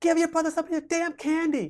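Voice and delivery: acted yelling. Retelling how his mother scolded him from the front seat: imitating mother yelling. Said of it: "she's, like, yelling to the top of her voice".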